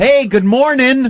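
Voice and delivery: forced, put-on cheeriness. Mocking the forced politeness of greeting a doorman: fake cheerful greeting. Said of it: "put on that fake smile and go".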